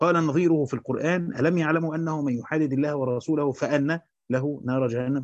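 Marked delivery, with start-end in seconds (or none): none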